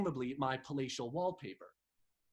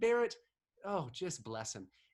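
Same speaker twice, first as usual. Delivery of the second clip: ordinary delivery, nothing marked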